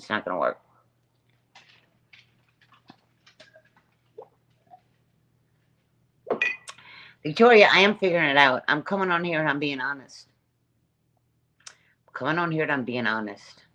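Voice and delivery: increasingly upset, insistent tone. Answering comments from viewers while getting upset. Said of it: "I'm getting upset".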